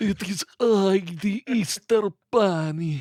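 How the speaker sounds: put-on very drawn-out, slow, high old Slavic accent. Voicing the Easter Bunny who reveals himself: old Slavic voice. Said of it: "an old Slavic voice".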